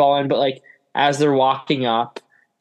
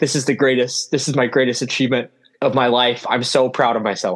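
mock choked-up voice, slower; 2 semitones lower than usual. Retelling a man's answer when asked about his achievements: imitating someone choking up. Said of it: "he's like kind of choking up a little bit".

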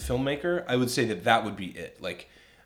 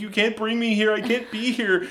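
put-on tearful tantrum, higher and louder; 11 semitones higher, 5 dB louder than usual. Retelling a movie scene where the wife throws a fit: imitating a crying fit. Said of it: "throws a fit and starts crying".

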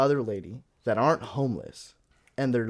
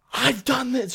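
acted scream, higher and louder; 12 semitones higher, 5 dB louder than usual. Retelling how a woman in a restaurant yelled at the manager: imitating a woman screaming. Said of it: "she starts screaming".

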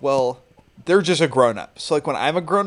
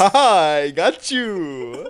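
put-on Transylvanian-style accent; 4 semitones higher, 3 dB louder than usual. Acting out vampires tricking a friend, say their punchline in a Transylvanian accent. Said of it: "I like your Transylvanian accent there".

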